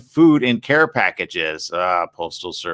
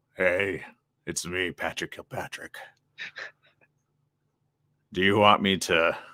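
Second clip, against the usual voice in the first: low, deep, heavy screen villain voice; 4 semitones lower, 9 dB quieter than usual. Showing another speaker a favourite impersonation: Patrick Kilpatrick impression. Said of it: "I love to impersonate him".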